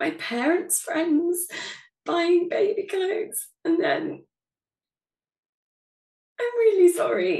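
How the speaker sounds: crying, tearful, high and swooping. Speaker apologizing for crying while telling their story, crying. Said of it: "I don't know why I'm crying".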